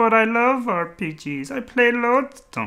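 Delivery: very high, loud, shrill, whiny puppet voice. [name] defends himself to friends over a game he didn't like, sounding like a Frank Oz character. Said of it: "You sound like a Frank Oz character now".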